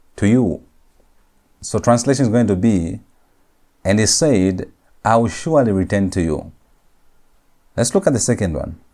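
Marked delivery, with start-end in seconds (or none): none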